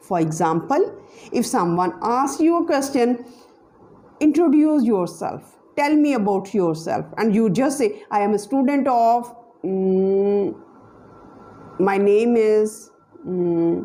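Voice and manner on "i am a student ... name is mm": very slow, stumbling, halting, hesitant, drawn-out mm. Example of an awkward answer to introduce yourself: hesitant pauses with mm. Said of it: "this is awkward".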